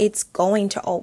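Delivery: plain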